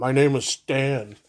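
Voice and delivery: plain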